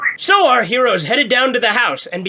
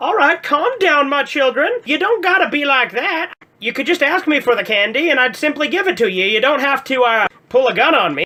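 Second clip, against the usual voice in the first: put-on old lady voice; 2 semitones higher than usual. Voicing an old lady answering armed trick-or-treaters: put-on old lady voice. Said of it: "I'm an old lady".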